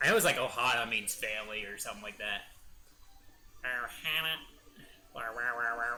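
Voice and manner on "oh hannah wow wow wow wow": put-on robotic voice. Speaker tries out a voice they do, in a put-on robot-like voice. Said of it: "every time I do that voice".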